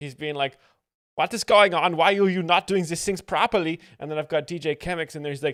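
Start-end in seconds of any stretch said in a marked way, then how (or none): 1.1-3.8 put-on raised, high German accent. The speaker recounts voicing Sauerkraut's complaint during a chaotic moment, Sauerkraut German accent. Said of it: "I got to do a German accent for Sauerkraut".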